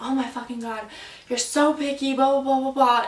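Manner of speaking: mock angry, really mad rant, piling on griping. Retelling how an ex reacted to a pizza complaint: imitating an angry ex. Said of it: "he got really mad".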